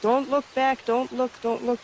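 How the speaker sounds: plain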